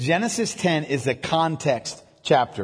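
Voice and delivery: slow, deliberate dictation, spelled out.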